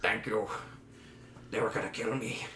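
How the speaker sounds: relieved, breathy near-whisper in character voice. Voicing a relieved hunchback thanking the party: hunchback's relieved voice. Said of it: "I'm changing my voice every time".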